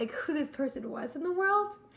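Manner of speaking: voice welling with emotion. Talking to someone about their mother's passing, getting emotional. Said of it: "now I'm getting emotional".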